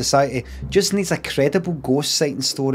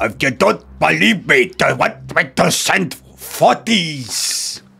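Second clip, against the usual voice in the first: put-on Scottish accent; 2 semitones higher, 4 dB louder than usual. Retelling what a man they sent on a job said, in a Scottish accent. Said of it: "in this fucking Scotch accent".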